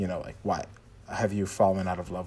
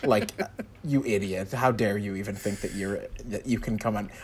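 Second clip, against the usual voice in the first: plain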